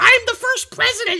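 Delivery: very high, screeching, screaming tiny voice. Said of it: "thousands of little powers screaming around".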